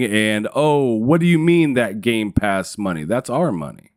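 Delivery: ordinary delivery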